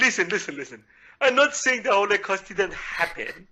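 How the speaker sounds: put-on Persian accent. Doing a bit about an Iranian president: Ahmadinejad impression, Persian accent. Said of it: "I can do a perfect Persian impression".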